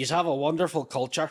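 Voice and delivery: put-on doing an Irish accent. Acting out a line someone said, in a put-on irish accent. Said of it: "we're just doing Irish accents".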